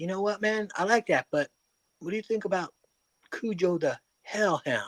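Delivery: very soft speaking. Retelling a man making a poster, imitating his very soft voice. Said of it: "the softest voice you would ever hear".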